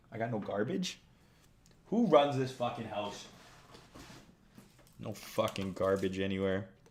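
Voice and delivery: chewing gum while talking. Interrupting talk about a market relief bounce, chewing gum while talking. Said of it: "I'm chewing this gum into fucking smithereens".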